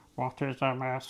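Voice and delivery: put-on alien voice. Describing an alien visitor in an analogy, the speaker voices its question in an alien voice. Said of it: "That's my alien voice".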